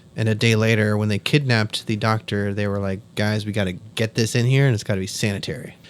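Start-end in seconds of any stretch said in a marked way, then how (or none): none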